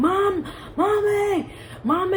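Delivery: high-pitched, frightened, screaming voice. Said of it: "So I'm screaming".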